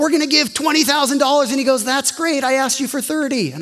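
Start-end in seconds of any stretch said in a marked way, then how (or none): 0.0-1.5 mock, put-on, bursting, all-excited voice. Retelling going back and telling the Lord the news, retelling own excitement. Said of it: "I was all excited".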